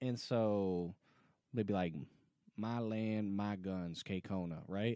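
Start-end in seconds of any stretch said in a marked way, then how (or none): 2.6-4.6 put-on Southern drawl, quieter and slower. Imitating how other people would read the name, in a southern drawl. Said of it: "With that kind of southern drawl".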